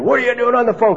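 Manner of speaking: high-pitched, angry yelling.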